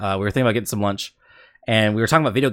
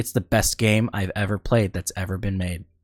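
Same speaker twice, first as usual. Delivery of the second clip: put-on, flat, deadpan delivery. Retelling what a coworker said about a game: imitating a deadpan statement. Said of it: "he just deadpan looks me straight in the face".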